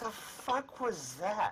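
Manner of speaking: very high voice, drawn out very slowly. Voicing a character who pokes her head out of a bush: voicing Miss Blackfire. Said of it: "Pokes her head out of the bush and goes".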